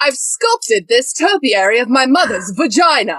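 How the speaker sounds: slow, deliberate comic delivery. Quoting the actor's character from the show: Matt Berry impression. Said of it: "He's the one who's like".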